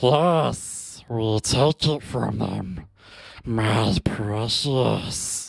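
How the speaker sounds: low, dry-throated, rasping creature voice. A speaker performs his promised impression for the listeners; Gollum impression. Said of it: "the Gollum impression for you guys".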